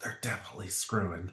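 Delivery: hushed, very quiet, barely audible whisper. Playing a character leaning over to another, whispering. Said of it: "he whispers".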